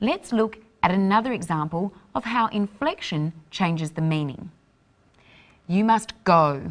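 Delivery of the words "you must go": louder voice. Demonstrating how inflection changes meaning; ordering someone to go away. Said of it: "You must go is ordering someone to go away".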